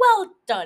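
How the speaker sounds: painfully awkward delivery. Retelling a scene where Doug meets a young musician, mock-awkward Doug impression. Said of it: "super awkward and is like".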